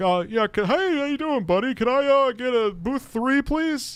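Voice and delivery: fake-nice, put-on friendly voice, pitched very high. Retelling how a rude man suddenly asked for a tanning booth: imitating fake niceness. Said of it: "started acting nice towards me".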